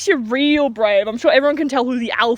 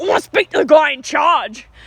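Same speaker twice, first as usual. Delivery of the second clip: acted tough-guy voice, blunt and aggressive; 2 semitones higher than usual. Retelling a customer demanding to speak to someone in charge: imitating an aggressive customer. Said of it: "he sounds aggressive".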